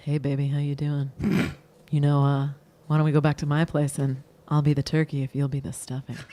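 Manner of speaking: low, put-on seductive, sexy voice. Reading a turkey-and-stuffing pickup line aloud: sexy pickup-line voice. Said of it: "you were going to say it in a sexy voice".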